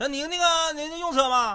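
very high, unhurried, drawn-out voice. The speaker mimics the man for a listener, imitating a driver. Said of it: "我给你模仿一下".

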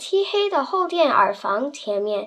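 plain reading voice

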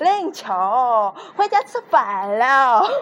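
put-on Hubei dialect accent. Quoting how a primary-school acquaintance called out to 林秋, Hubei dialect accent. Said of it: "柠檬只跟小学的一个人学过一点点湖北话……他都这么讲".

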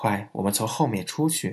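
plain

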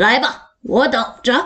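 gruff, coarse, rough-edged voice. Narrator reading a teacher's words to the class, in a gruff, rough voice. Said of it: "老师粗声粗气地说".

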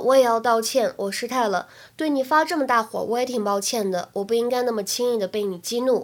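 plain

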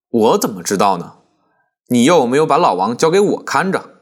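plain

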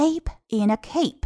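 "ape" stressed and said slowly.

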